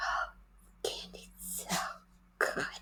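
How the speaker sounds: slow, breathy seductive whisper. Speaker demonstrates voices for eating candy, in a seductive voice. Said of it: "what would a seductor say?".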